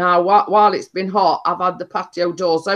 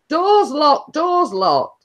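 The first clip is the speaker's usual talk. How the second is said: mock small boy shouting, high-pitched; 9 semitones higher than usual. Retelling what the little lad shouted from behind, imitating a little boy shouting. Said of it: "little lad shouting".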